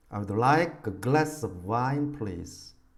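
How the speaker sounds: like, glass, wine, please drawn out with strong stress. English lesson reading a sentence aloud: like, glass, wine, please stressed. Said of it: "이 네 개 단어를 강하고 길게 읽고 나머지를 빠르고 약하게 붙여서 한번 읽어보도록 하겠습니다".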